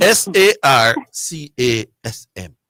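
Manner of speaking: slow, deliberate spelling, each letter dragged out.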